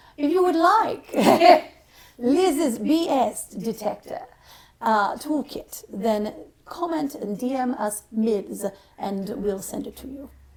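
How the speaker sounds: put-on slow, pompous British accent.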